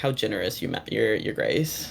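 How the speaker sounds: softly chuckled, quiet, amused, courteous voice. Game master as Orion, saying it quietly to the players walking away: amused chuckling voice. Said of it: "Just in like a very like chuckled voice".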